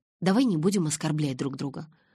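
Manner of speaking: ordinary delivery, nothing marked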